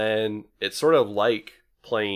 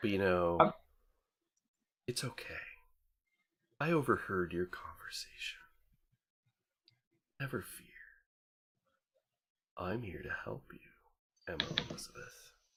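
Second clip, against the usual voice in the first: cold, smooth, silky voice, much quieter; 11 dB quieter than usual. A voice inside a character's head offers its help, cold, smooth voice. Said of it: "you just hear this like cold, smooth voice in your head".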